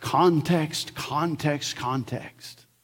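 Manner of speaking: soft, very dignified professorial delivery. Repeat your Greek professor's constant answer about word meanings, in a very dignified Dr. Munn voice. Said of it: "he would always say in a very dignified voice".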